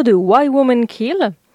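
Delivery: English accent and pronunciation. Naming an American series title during French talk: English accent. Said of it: "avec mon super accent anglais".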